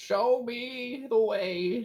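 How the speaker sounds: put-on very high-pitched elderly man's voice. Playing a character in a group search, asking to be led: old man voice. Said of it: "Why did [name] suddenly become an old man?".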